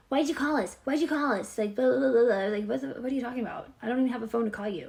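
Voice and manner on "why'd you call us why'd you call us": play-acted, high, shouted, yelling police voice. Retelling how the police questioned the speaker: imitating police yelling. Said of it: "the police were yelling at me".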